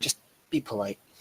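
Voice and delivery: hushed, very quiet half-whispered speech. Walking along, the speaker leans toward a companion and speaks: half-whisper. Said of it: "whisper and say".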